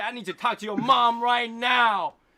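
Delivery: terrible put-on Chinese accent, screamed very high and loud. Describing how he will call them, screaming in a bad Chinese accent. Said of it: "screaming in like really bad accent Chinese with an English accent".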